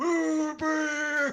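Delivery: put-on shrill, very high shout in Southern accent. Shouting a spell name in character: shouting in a southern accent. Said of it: "but I shout".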